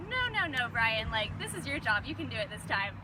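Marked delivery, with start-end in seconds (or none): none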